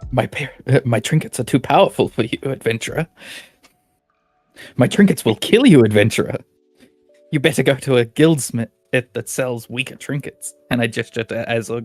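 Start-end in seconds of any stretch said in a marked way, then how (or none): 0.1-10.5 resolute, staunch, stern, unbudging tone. Voicing a character refusing to craft for an adventurer: Delilah speaking staunchly. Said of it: "Delilah turns to you and looks very staunchly".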